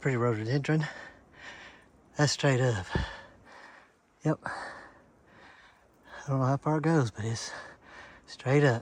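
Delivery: winded, catching breath. Hiker pausing partway up a steep trail to catch their breath, out of breath. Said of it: "catch my breath".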